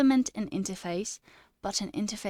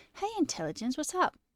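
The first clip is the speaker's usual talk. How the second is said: put-on British accent, pitched up; 8 semitones higher than usual. Told to work on their british accent, trying out a put-on british accent. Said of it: "Do I sound like I'm Australian though? Or British?".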